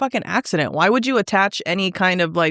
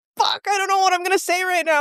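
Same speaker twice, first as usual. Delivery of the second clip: mock, very high, rushed, frantic, panicked gabble; 12 semitones higher than usual. Retelling spelling letters on a phone call and blanking on the next one, retelling own panic. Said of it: "I started panicking".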